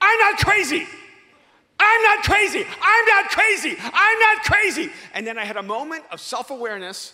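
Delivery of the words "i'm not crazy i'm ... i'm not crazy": very loud, very high, drawn-out screaming. Retelling how they reacted when told to get help, reenacting their own screaming. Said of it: "I started screaming".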